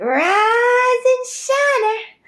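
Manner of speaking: very high shrill shriek, rise drawn out. Recalling the mother who woke them every morning as a child: imitating mother's shrill shout. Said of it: "at the top of her lungs".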